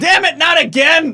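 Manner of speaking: very high, loud yelping cry of pain. Narrating a character whose leg just snapped the wrong way, pained cry. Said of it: "and he cries out".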